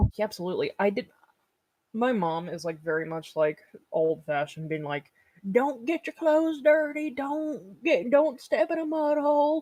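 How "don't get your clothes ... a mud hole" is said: very high, slow southern Kentucky drawl. Describing her mom, the speaker quotes her: imitating mom's Kentucky accent. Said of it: "this is literally her accent".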